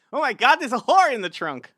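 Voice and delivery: loud, high, belted swooping exclamation. Saying a word the way Norm Macdonald says it: Norm Macdonald voice. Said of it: "without his voice in my head".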